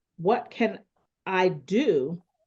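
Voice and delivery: heavy, hard emphasis on the word "do". Explaining how moving emphasis in a question changes context, stress on do. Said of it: "The emphasis is on do".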